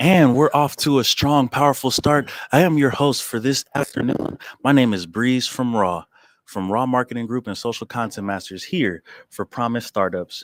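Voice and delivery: put-on loud event-host announcer voice. Host opening a roundtable discussion for Promise Startups, in a fake host voice. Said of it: "I'm sorry for this fake voice that I'm putting on".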